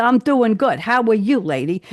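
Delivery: put-on New York accent. Quoting what Mark says when she comes into the store, in a New York accent. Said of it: "Mark is pretending to be a New Yorker".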